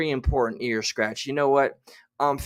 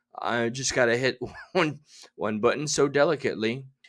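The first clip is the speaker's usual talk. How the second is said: ordinary delivery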